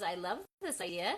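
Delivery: ordinary delivery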